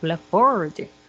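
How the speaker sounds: blackbird with the stress placed on bird. Explaining compound noun stress, saying blackbird with stress on bird. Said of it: "뒤에 bird에 있죠".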